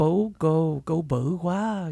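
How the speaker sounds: slow, sultry, sexy Vietnamese accent.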